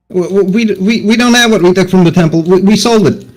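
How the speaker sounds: put-on frightened stammering child voice. Voicing the bravest of the children, who is shaking with fear, stuttering scared child. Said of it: "he stutters. Even he is shaking in his boots".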